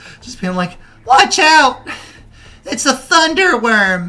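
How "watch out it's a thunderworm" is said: little, sad, pitiful voice, very high. Voicing a child in the crowd shouting a warning: little sad, pathetic voice. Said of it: "little sad, pathetic voice".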